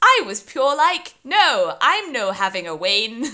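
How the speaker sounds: very loud, robotic text-to-speech voice. Imitating text-to-speech software reading a paper aloud: imitating a text-to-speech voice. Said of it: "I need to do it in his voice".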